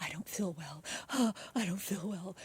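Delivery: soft, slow, put-on weak, faint-sounding voice. Retelling a suspect's arrest after calling her acting fake: imitating fake faintness. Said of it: "and then she's like".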